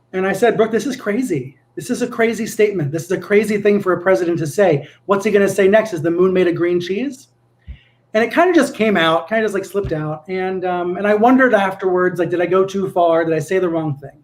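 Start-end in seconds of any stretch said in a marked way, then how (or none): none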